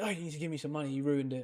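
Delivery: acted, indignant, accusing, angry and demanding voice. Retelling the painter's reaction after stepping on his painting: imitating someone angry. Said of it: "really angry".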